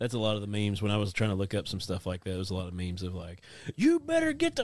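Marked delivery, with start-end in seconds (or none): 3.7-4.6 barked cussing, like a fed-up parent. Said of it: "their parents cussing at the kid".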